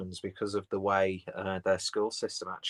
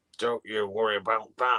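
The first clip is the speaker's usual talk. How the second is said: mock accent from northern England. Repeating a line that sounds like something a comedian would say: northern accent. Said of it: "I did it in a northern accent".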